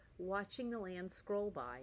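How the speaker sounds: plain reading voice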